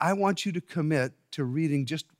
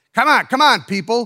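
put-on grandma voice, raised and high; 6 semitones higher, 7 dB louder than usual. Retelling a chaotic Thanksgiving kitchen scene, imitating Grandma. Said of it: "you hear Grandma's voice".

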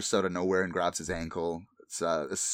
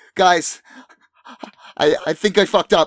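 play-acted very high, very loud, shrill panicked blurt; 11 semitones higher, 15 dB louder than usual. Retelling a plot, voicing a character who bursts in: imitating a panicked character. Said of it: "He's panicked".

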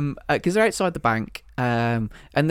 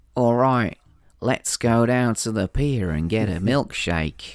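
flat, one-tone delivery; 4 semitones lower than usual. Imitating a film character suggesting a milkshake trip: monotone Goose impression. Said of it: "he's very one tone".

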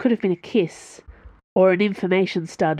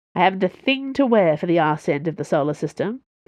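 ordinary delivery

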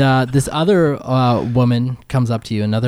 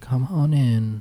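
barely audible, faint, quiet voice; 5 dB quieter than usual. After a knock on a big door, a voice answers from inside, really faint. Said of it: "you hear like a really faint voice".

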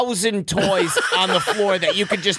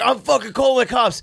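put-on high, rough, ragged screaming; 5 semitones higher than usual. Retelling a man who tackled him and was screaming at him, retelling a scream. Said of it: "He's like fucking screaming at me".

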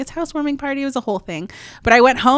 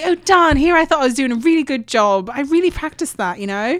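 put-on British accent, done as a woman; 4 semitones higher than usual. Retelling her reply to her date about sounding American; British woman accent. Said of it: "I turn to a British woman".

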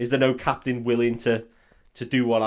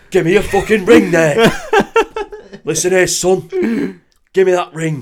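put-on very loud, swooping northern English accent; 7 semitones higher, 10 dB louder than usual. Riffing on a film character demanding the ring, in a northern accent. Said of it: "Where's your northern accent?".

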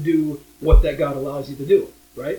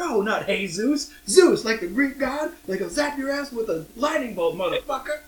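pitched-up tough-guy voice, laying on attitude; 7 semitones higher, 5 dB quieter than usual. Retelling a movie scene, quoting the character Zeus: Samuel L. Jackson voice. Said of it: "you doing Sam Jackson".

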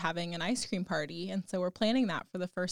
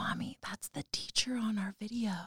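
put-on hushed, whispered little child voice; 3 semitones higher, 4 dB quieter than usual. Retelling what kids say to their parents: imitating a child whispering. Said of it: "I hear them whisper to their parents".

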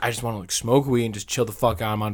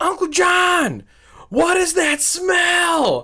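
mock very high, drawn-out holler; 4 dB louder than usual. Retelling calling out to an uncle far behind: retelling own yell. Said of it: "And so I'm yelling".

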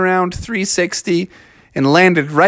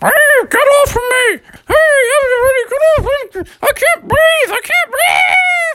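high, shrill yelling. A storyteller reads a grandmother bear squashed under a pile of bears: yelling Granny Bear voice. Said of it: "yelling out".

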